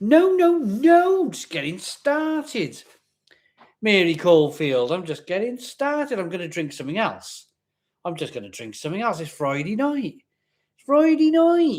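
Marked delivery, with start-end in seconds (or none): 9.2-11.8 put-on Wiltshire accent, higher. Joking about a drink on a Friday evening: best Wiltshire accent. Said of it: "in my best Wiltshire accent".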